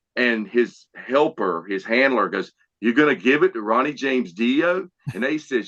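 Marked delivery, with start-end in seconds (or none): none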